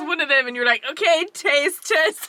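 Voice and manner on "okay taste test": mock drunk-sounding tipsy delivery, pitched up. Retelling the other speaker's story post: imitating a drunk voice. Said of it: "She's so drunk right now".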